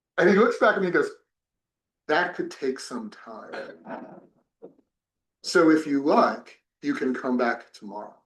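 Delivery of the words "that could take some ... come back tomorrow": put-on Queen's English accent. Retelling the man's reply after being asked to be taught, in Queen's English accent. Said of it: "He spoke the Queen's English".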